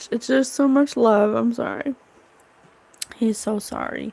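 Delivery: tearful, crying while talking. Speaker addressing listeners, crying while talking. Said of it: "I wasn't gonna cry".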